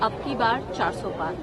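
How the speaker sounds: ordinary talk, nothing marked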